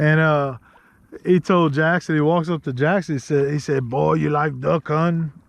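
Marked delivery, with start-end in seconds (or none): 3.9-5.3 put-on thick, heavy Cajun accent. Retelling what an old man said walking up to Jackson, in a thick Cajun accent. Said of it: "thick accent".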